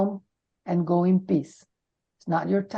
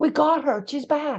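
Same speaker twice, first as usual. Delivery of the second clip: high, urgent calling shout; 7 semitones higher than usual. Recalling nearly dying, acting out what they shouted, imitating people shouting. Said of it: "and then they shout".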